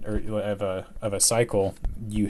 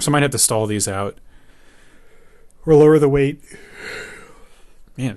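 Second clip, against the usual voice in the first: talking through a yawn, higher and louder; 4 semitones higher, 6 dB louder than usual. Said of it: "sorry, I'm yawning".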